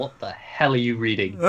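ordinary talk, nothing marked

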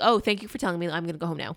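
usual speaking voice

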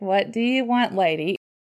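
mock-surprised voice. Host recalls phoning the guest out of the blue, imitating the guest's surprised reaction. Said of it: "you sounded really surprised".

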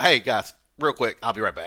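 acted, mock-casual nonchalant tone. Retelling how another host left the show mid-fire, imitating a casual tone. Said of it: "so casually".

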